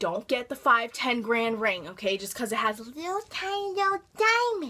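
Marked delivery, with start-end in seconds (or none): 2.8-4.7 put-on tiny, very high, childlike baby voice. Giving advice about buying rings, dropping into a baby voice. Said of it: "I have to say that with a baby voice".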